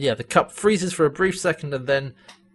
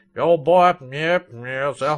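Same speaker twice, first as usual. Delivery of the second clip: thick, extra southern drawl, very slow and drawn out. Describing an aged character's speech, imitating Crichton's extra southern accent. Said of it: "In his accent, he's like".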